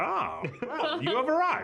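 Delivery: very high stock sorcerer voice. Showing how a wizard voice would sound, stereotypical wizard voice. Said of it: "Now imagine if you're doing a wizard voice, you'd be like".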